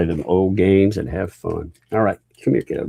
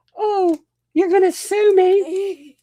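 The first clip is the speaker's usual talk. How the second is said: put-on girl voice, higher; 3 dB louder than usual. Faking a phone call from Megan Fox: Megan Fox girl voice. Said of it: "Stop with that girl voice".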